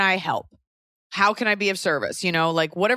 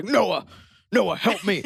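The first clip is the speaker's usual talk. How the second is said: put-on spooky poltergeist-like demon voice, calling out. Acting out a demon calling a name for help: imitating a demon voice. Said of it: "like a demon is coming through her butthole".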